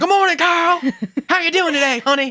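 very high, angry yell. Showing how she speaks to Carl, mock-angry Harriet Winslow yelling. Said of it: "she is yelling and sounds mad".

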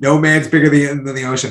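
ordinary delivery

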